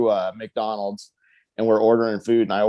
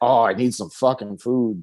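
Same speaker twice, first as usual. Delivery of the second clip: put-on drunk, boozed-up, tipsy-sounding talk. Retelling what a drunk friend said in the apartment: drunk Jason Strife voice. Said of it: "in his drunk Jason Strife voice".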